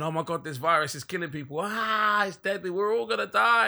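put-on panicked voices. A speaker acts out how the masses react to virus news, imitating panicked people. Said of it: "And people are panicking".

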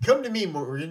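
usual speaking voice

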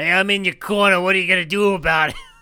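put-on old lady voice with a smoker's rasp. Imitating an old comedy club owner: Mitzi Shore impression. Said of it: "an old smoker lady".

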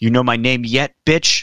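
imitated screaming voice. Retelling a fighter's post-fight outburst at her opponent: imitating someone screaming. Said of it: "she's screaming at Lybarger".

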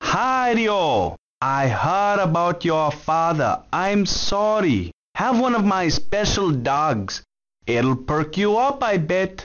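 put-on Jamaican-accented voice. A hot dog stall vendor speaks in a jamaican accent. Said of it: "the Jamaican hot dog stall vendor".

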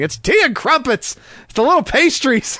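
high-pitched mock shout.

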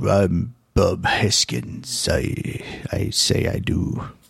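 very slow, gruff British voice. Imitating the actor talked about: gruff British Bob Hoskins voice. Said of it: "one of those gruff British voices".

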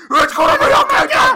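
loud, high-pitched, mock sobbing wail.

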